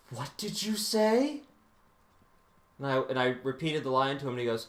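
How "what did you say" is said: play-acted frightened, alarmed, terrified high-pitched voice. Retelling a theater teacher's sudden question: imitating a terrified teacher. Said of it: "turns around with this terrified look on his face and goes".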